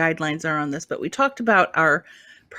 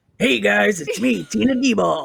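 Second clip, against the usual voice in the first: put-on rough-toned voice, higher; 5 semitones higher, 3 dB louder than usual. Showing how a comedian friend sounds, imitating Tina Deball. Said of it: "Tina's like this".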